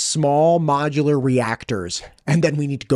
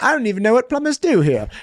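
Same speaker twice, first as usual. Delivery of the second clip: put-on pitched-up old-fashioned English accent; 8 semitones higher than usual. Recalling a chat with Don, an old Englishman: Don's old English accent. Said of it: "Don's this old English guy with accent".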